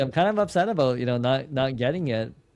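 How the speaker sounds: usual speaking voice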